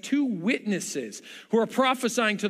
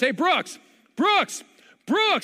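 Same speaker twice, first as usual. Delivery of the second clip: calling out, building louder, rising pitch; 8 semitones higher, 4 dB louder than usual. Retelling calling a child near a road: imitating own yelling, getting louder. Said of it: "his voice gets louder, turns to screaming".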